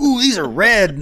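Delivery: high, loud, slow mock gasp.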